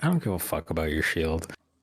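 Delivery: offhand, nonchalant, yet dead serious and very earnest. Dismissing a shield when asked what it can do, nonchalant but very earnest. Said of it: "like kind of nonchalantly, but very earnestly".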